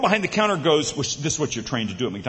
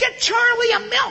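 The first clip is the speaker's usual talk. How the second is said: tiny, very high, squeaky voice. Retelling a tiny woman at McDonald's instructing her big husband, in a tiny Minnie Mouse voice. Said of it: "this tiny little Minnie Mouse voice".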